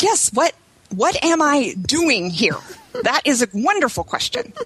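furious trembling voice. Retelling own reply to someone who walked in: retelling own angry shaking voice. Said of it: "I was so mad. My voice was shaking".

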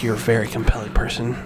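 low, as seductive as possible voice. Answering the other speaker, trying to be as seductive as possible: seductive voice. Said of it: "Why'd you say it like that?".

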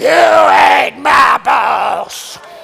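loud, rough, growling lion-like roar. Speaker shows listeners how to tell off the devil, roaring like a lion. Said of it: "we might need to roar like a lion".

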